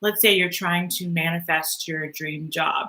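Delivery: normal talking voice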